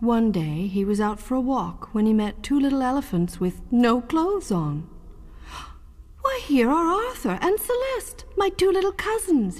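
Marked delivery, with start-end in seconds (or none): 6.2-9.6 very high, astonished, amazed cry. Narrating Babar meeting his two little cousins, crying out in amazement. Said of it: "he cried in amazement".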